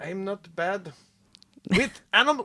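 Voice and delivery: fake German accent, soft and high. Asked whether they do German accents, trying one in a put-on German accent. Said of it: "do you do German accents?".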